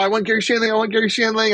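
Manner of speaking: loud, high-pitched, rushed blurting out. Retelling a man feeding quarters into a machine, imitating him being loud. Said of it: "but you're so loud about it".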